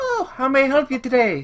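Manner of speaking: put-on very high, lilting, sing-song Irish accent. Game narrator voicing a halfling greeting a player character, in an Irish accent. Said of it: "She sounds Irish".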